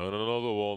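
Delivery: put-on large man voice. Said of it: "large man voice".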